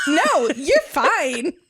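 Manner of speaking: put-on eager, excited, gushing romantic-hero voice. Retelling a co-host's reply to a guest's accent: imitating an excited book boyfriend reply. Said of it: "it was the excited book boyfriend".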